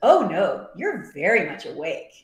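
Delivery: put-on heavy sarcasm, sing-song, slow, swooping drawl. Retelling a scene where someone asks if he's dreaming: imitating Lanfear's sarcastic tone. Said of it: "And it sounds so sarcastic".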